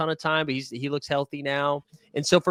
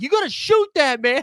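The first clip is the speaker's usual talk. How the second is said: mock very high-pitched yelling; 12 semitones higher, 4 dB louder than usual. Retelling what teammates yelled about the missed shot: imitating teammates yelling. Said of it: "my team is yelling at me too".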